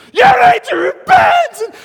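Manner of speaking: shrill, blaring, very loud, high, drawn-out preacher yell. Retelling a guest speaker's call to repent: imitating a spitting preacher. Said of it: "there's spittle coming out of his mouth".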